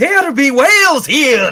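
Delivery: put-on, shrill, very loud scream in Scottish accent. Joking about what they heard at the time, in a screaming Scotsman voice. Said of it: "a Scotsman screaming".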